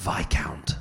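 posh, upper-crust, whispered murmur. Imagining a burglar murmuring into a sleeping ear: imitating a posh whisper. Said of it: "really posh burglar who'd ... whisper into my ear".

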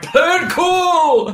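put-on very high, loud old-man voice, "cool" drawn out. Describing a scene from a show, quoting a character's line really loud. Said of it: "He says it really loud".

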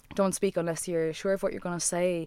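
plain

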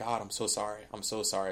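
put-on desperate begging and pleading. Retelling an apology to God after doing something dumb: imitating own begging and pleading. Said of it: "begging and pleading".

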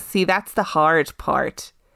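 put-on, attempted American accent. Asked to try an American accent, repeating a line: American accent. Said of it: "I want to hear your attempt at an American accent".

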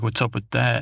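plain

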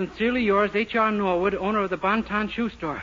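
ordinary delivery, nothing marked

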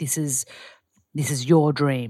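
low serious register. Showing how they drive something home, speaking in a low, serious register. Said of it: "when I get really passionate, I lower my register".

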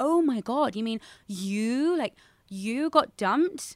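high, slow, absurdly over-the-top disbelief. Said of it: "reacts in this ridiculously absurd, over-the-top way".

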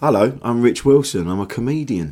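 put-on, polished telephone voice. Introducing oneself when asked who you are: phone voice. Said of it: "that voice change".

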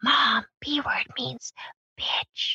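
breathy, hush-hush whisper. Retelling how a son whispered the B word to his mom: imitating Parker whispering. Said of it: "So he whispers it to me".

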